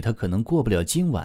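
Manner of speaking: ordinary delivery, nothing marked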